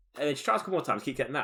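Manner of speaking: ordinary talk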